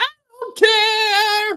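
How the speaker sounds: very high voice with "care" stretched long. Showing how the comedian sounds: Kevin Meaney impression. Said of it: "He kinda sounds like".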